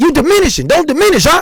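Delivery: high-pitched, loud yelling.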